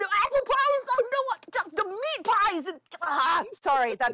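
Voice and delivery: garbled frantic babbling. Tripping over own words while answering the other speaker, garbled frantic babbling. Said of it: "You literally sound like the Tasmanian devil right now".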